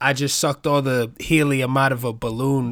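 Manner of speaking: usual speaking voice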